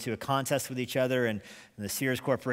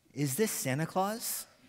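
tiny, trembling, quivering high small voice; 5 semitones higher than usual. Retelling a phone call Colonel Shoup answered, voicing the caller: imitating a small quivering voice. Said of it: "a small, quivering voice that asked".

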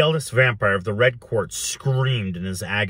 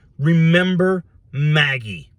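raised shout, pitched up; 6 semitones higher, 4 dB louder than usual. The narrator calling out to a terrified woman, shouting. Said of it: "I shouted".

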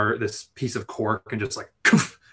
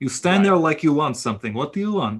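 attempted Russian accent, pitched up; 5 semitones higher, 4 dB louder than usual. Game character confronting someone lingering in the room, attempted russian accent. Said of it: "I tried to do Russian".

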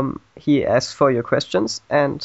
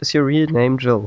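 ordinary delivery

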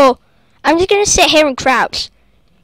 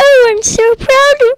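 very high-pitched, squeaky, badly done put-on voice; 10 semitones higher than usual. After apologizing for screaming while recording, speaker imagines mum's reaction: bad impression of mum. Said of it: "That was a bad impression".

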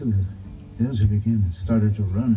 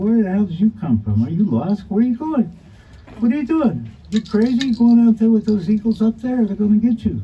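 squeaky, very high, loud, incredulous mouse voice; 12 semitones higher, 6 dB louder than usual. A storyteller voices a mouse questioning a newcomer, disbelieving big fat mouse. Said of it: "There's this big fat mouse sitting on a throne-like thing and looking at him in disbelief".

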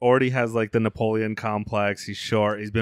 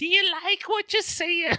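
put-on British accent, higher. Joking about british women: mock british accent. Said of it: "I don't know what a British accent".

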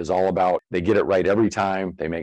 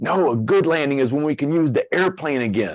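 put-on angry yelling, high and furious scream; 7 semitones higher than usual. Retelling how a flight instructor answered a student: imitating a screaming instructor. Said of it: "the instructor's screaming at him".

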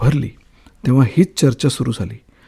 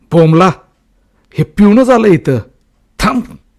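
startled, alarmed shout, higher and louder; 7 semitones higher, 8 dB louder than usual. Reading a story aloud, voicing a man who jumps aside and shouts, startled shout. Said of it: "दचकून एकदम बाजूला सरकून बाबू ओरडला".

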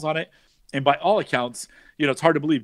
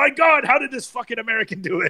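acted, high-pitched, enraged, furious screaming outburst; 8 semitones higher than usual. Imitating designers throwing paperwork off their desks: imitating someone screaming. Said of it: "screaming in Italian".

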